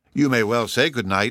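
laughing, said through a laugh. Narrator reads a lady answering the narrator's good night, laughing. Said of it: "laughed Lady Muriel".

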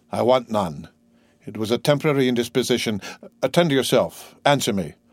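plain

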